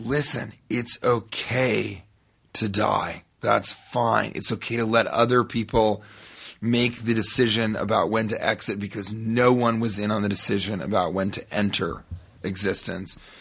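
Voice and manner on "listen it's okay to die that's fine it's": usual speaking voice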